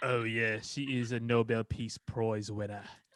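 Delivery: put-on New Zealand accent. Joking about a character's ex-girlfriend: imitating a Kiwi accent. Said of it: "Why is he Kiwi?".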